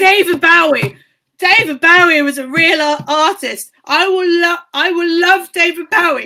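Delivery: put-on shouting voice. Reminding the listener of a drunken night, imitating the listener's mum shouting. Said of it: "your mum was shouting".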